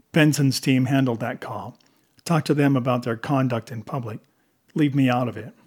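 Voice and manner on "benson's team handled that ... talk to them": usual speaking voice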